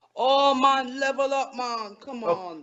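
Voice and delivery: fake Jamaican accent, very slow and drawn out. Performing a phrase after being asked: put-on Jamaican accent. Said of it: "Say "level up" in Jamaican".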